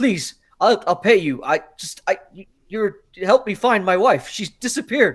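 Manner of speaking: high, loud, desperate, stumbling voice. Voicing a man in a town square begging adventurers for help: begging desperately. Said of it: "literally begging these people".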